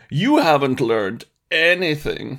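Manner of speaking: sleazy, suggestive, pervy, creepy voice. Imitating a game unit's click line: pervy Obi-Wan Kenobi voice. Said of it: "as pervy as I put it in my voice there".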